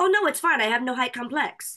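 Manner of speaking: put-on German accent. Retell a man's reply to your offer not to wear heels, imitating a beautiful german accent. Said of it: "with his beautiful German accent".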